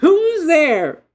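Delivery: shrill, piercing, very high, very loud, sharp womanly call. Voicing someone answering a knock on the door: sharp womanly voice. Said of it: "a sharp womanly voice goes".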